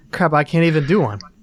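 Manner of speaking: ordinary delivery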